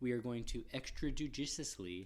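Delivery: normal talking voice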